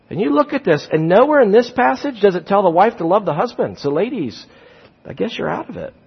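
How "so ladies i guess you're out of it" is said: whispered, playful, teasing, hushed voice. Addressing the ladies while discussing a bible passage: teasing. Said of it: "I'm teasing you".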